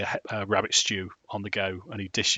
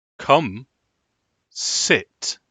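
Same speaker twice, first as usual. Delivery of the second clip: firm, raised, forceful voice; 4 semitones higher, 6 dB louder than usual. Game master voicing Strahd, shifting from asking to telling: Strahd's firm, direct voice. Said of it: "slight pitch change in his voice".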